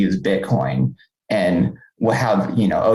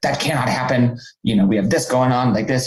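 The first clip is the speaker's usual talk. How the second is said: mock angry outburst, higher; 4 semitones higher than usual. Retelling how a guard scolded a man: imitating an angry guard. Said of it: "super upset, super angry".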